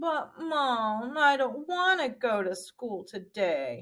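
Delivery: slow, sulky, mopey voice, mom drawn out. Demonstrating how to voice a sad character pleading with mom, mopey sad voice. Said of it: "change it to like the mopey sound".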